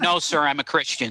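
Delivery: plain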